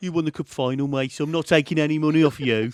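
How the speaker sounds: put-on loud Birmingham accent throughout, Brummie. Retelling a man's words to Ben after the cup final, Birmingham accent. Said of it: "Say it in the Birmingham accent".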